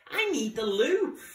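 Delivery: squeaky little outburst, high, loud. Crocodile, squeezed in with the others, speaks up, squeaking. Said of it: "squeaked Crocodile".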